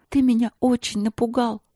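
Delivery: persuading. Narrator reads a girl talking to a bear, coaxing. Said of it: "продолжала уговаривать его Василина".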